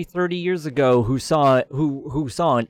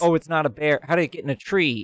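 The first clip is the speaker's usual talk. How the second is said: usual speaking voice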